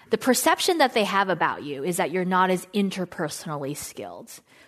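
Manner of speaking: ordinary talk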